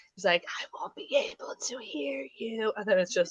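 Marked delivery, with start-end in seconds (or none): 0.5-2.8 high, hushed whisper under the breath. Retelling a scene where he whispers to his cave's echo: retelling a whisper. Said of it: "he whispers to it".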